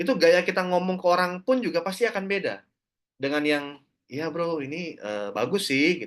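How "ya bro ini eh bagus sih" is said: mock-hesitant, halting delivery with filler sounds. Showing how an unconvinced person talks to others: imitating a hesitant, unsure person. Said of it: "itu masih orang yang ragu-ragu".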